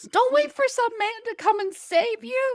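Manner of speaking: mock very high, shrill, loud yell. Recalling watching these shows, speaker retells yelling at the princesses. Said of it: "I was yelling at that at the princesses".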